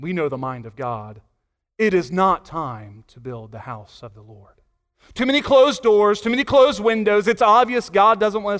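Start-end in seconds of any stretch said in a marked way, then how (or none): 0.0-7.3 pious, sanctimonious, holier-than-thou voice. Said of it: "almost like in a holy way".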